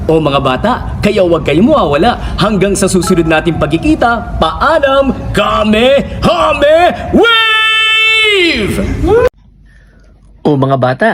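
swooping, swinging cartoon-hero dub voice. A voice impersonator, asked to prove his skill, addresses kids: Goku dub voice. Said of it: "si Goku nga pala ito".

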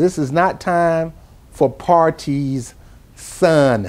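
very slow, drawn out, each word spaced. Repeating a point to an audience so it sinks in, very slow. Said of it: "Let me say it slow".

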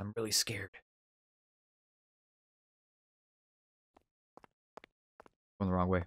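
very low, quiet, hushed half-whisper. Playing a game on stream and talking to viewers, half-whispering. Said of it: "Don't know why I'm whispering".

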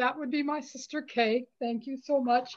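tearful, speaking through tears. Responding after being told someone is guiding and steering her: in tears. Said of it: "I'm in tears".

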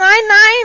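shrill, very loud, high-pitched scream. Mathis's daughter, freezing alone in the winter forest: screaming. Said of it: "schrie sie".

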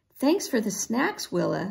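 ordinary talk

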